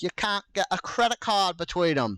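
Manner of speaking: put-on British accent. Imitating a british show about the pyramid blocks: british accent. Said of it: "That was the British show I was imitating".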